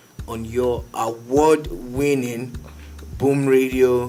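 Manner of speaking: slowed down. Redoing an intro after saying it too fast, slowed down. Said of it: "I need to slow it down".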